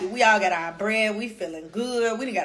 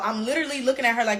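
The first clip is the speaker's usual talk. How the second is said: plain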